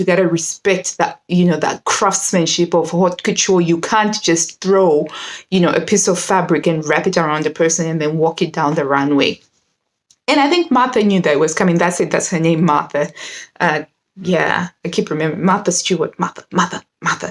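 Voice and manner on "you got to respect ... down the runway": usual speaking voice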